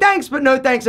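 ordinary talk, nothing marked

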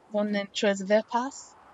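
poor, botched, fake French accent. Commenting on a video, speaker tries a bad French accent. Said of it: "That was bad".

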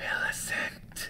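hushed, soft whisper. A hidden voice calls out to Millicent, whispered. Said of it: "whispered the voice".

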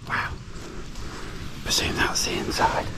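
hushed whisper. Speaker having a closer look, whispering so as not to get kicked out. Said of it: "I'm whispering".

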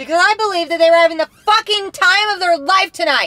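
shouting. In a heated scene, one character yells at another: yelling. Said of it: "you wanna yell?".

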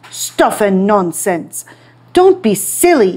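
sharp, short, curt and dismissive snap. Narrator reading the emperor dismissing the painter's warning: snapped. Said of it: "he snapped".

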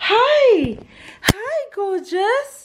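very high doggy-mummy pet-owner voice. Greeting Richie as he walks in, in a doggy mummy voice. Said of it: "Doggy mummy voice".

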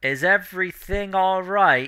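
distant, high, yelled call. Narrating to the players, voicing Jurna heard from afar: Jurna calling from far away. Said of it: "like being yelled at you from across like a vast valley".

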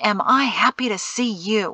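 ordinary delivery

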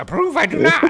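very high, very loud, shrill, booming, belted out. Answering himself as Yoda about paying for the saber: Yoda voice. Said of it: "if Yoda approves or not".

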